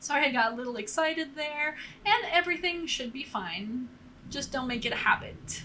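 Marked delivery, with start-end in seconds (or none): none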